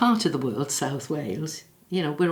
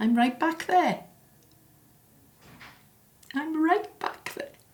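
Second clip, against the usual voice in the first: very high, tearful crying voice, breaking into tears; 13 semitones higher than usual. Remembering a year ago, the speaker feels right back there: crying. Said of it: "I told myself I wasn't going to cry".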